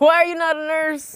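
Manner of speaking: very loud, high, put-on Filipino accent. Asked by the other speaker to do it again, in a filipino accent. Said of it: "pretty good Filipino accent".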